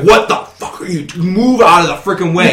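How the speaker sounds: furious, high, angry yell. Describing his girlfriend who gets serious about gaming, retelling her angry yell. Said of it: "She yells at you like".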